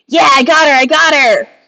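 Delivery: high, excited cheer like a voice from a crowd. A game master voices one voice from the throne room among the crowd, cheering. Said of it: "You all hear a bunch of cheering".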